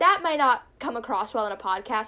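ordinary talk

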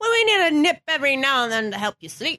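put-on Irish accent in a grandmother voice. Quoting the speaker's grandmother, done in an Irish accent. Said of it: "why i gave my grandmother uh, an irish accent".

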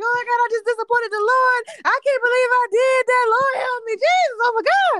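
high, loud, shrill screaming sobs and wailing. Retelling a breakdown in the car as the other person asks what's wrong; reenacting past screaming and crying. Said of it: "I just started like screaming and crying".

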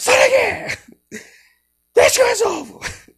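very high, very loud, shrill, booming shout. After cutting a finger, telling how they yelled at someone offering help, re-enacting a shout. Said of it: "eu só gritei".

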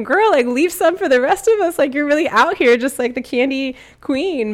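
high, loud, playful ribbing tone, acted out. Retelling teasing a woman whose wrist was stacked with candy, retelling teasing her. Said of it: "I was teasing her".

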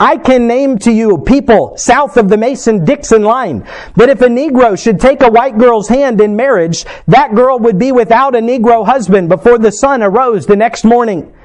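normal talking voice

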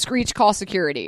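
ordinary talk, nothing marked

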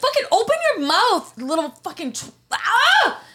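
furious. Ranting about a rude greeter to friends: angry. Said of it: "I love when you're angry".

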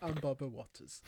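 put-on soft, poor British accent over Jamaican accent. Introduce yourself as the person you imitate, a Barbara Walters like a Jamaican guy doing bad British. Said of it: "like a Jamaican guy doing a bad British accent".

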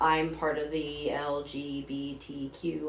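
slow, careful, letter-by-letter spelling.

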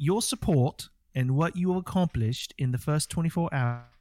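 imitated British accent. Reading a quoted Xbox statement aloud: British accent. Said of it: "You're speaking British or whatever that is".

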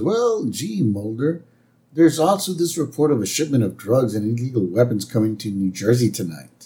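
normal talking voice

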